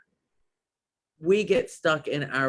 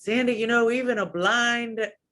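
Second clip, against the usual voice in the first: put-on high-pitched Southern accent. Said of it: "in this Southern accent".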